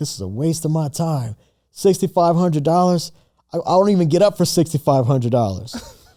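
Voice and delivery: put-on upset grumbling. Recalling a call from someone who was upset, acting out her upset. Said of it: "she was like all upset".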